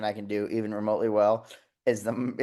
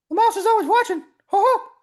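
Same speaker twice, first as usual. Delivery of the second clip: very high-pitched, loud, cartoonish voice; 7 dB louder than usual. Doing the only impression they can manage: South Park Mickey Mouse voice. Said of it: "the only impression I can do is the South Park Mickey".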